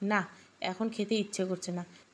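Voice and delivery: ordinary delivery, nothing marked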